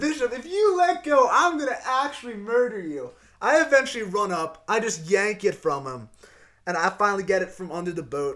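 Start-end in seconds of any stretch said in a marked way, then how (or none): 0.0-3.1 high, raised, full-throated mock shout. Speaker retells yelling at a man who started crying, retelling a yell. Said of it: "I'm yelling at him".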